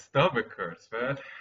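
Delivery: words squeezed out through hard laughter. Laughing hard with another speaker, laughing while talking. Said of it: "I haven't laughed this hard for decades".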